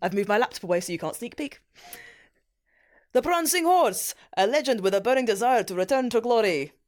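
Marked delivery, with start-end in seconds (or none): 3.1-6.7 loose, attempted put-on Italian accent. Reading a team headline for Reem to guess, in an unclear put-on accent. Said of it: "I have no idea what accent".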